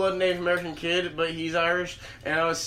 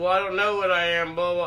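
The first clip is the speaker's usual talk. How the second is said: ordinary talk, nothing marked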